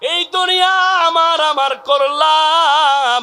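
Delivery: high, slow wailing cry.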